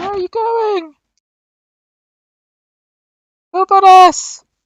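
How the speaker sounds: very high-pitched hollered shout. Voicing a guard calling after the players: shouting. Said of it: "one of the guys shouts".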